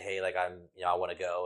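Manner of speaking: plain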